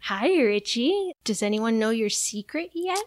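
terrifying, creepy clown voice. Retelling a movie scene where the clown taunts a character, in a terrifying Pennywise voice. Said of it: "your Pennywise voice is terrifying".

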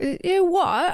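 put-on tiny, very high voice with British accent. Retelling a man thanked for change who doesn't catch a woman's blessing, little British accent. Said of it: "In his little British accent".

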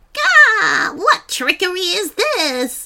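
very high, shrill, screeching witch voice. Narrating a story, the sea witch blunders into a net and screeches. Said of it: "She screeched".

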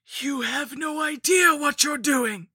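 piercing, shrill, loud, very high hiss. Narrating, a shambling woman closes in on the narrator and speaks: hissed. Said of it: "she hissed".

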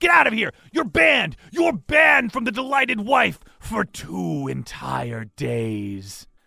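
high-pitched screaming. A narrator voices a woman chasing another out of a bar with a broom, screaming. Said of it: "and she's screaming".

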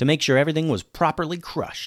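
ordinary delivery

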